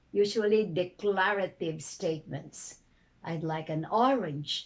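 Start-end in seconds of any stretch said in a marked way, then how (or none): 3.3-4.7 pitch rises, then falls on orange. Intonation lesson, declarative statement example, rising-falling on an orange. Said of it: "rising falling intonation".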